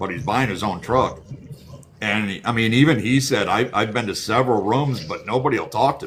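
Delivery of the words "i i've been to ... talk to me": usual speaking voice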